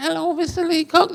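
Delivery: tiny, squeaky, very high little voice. Recalling someone greeting Mister Leacock, in Abbasidi's squeaky little voice. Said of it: "squeaky, squeaky little voice".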